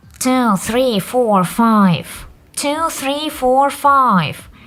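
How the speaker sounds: slow, nasal, pinched-nose voice. An instructor demonstrates counting through the nose: nasal voice. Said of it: "Speak directly through the nose".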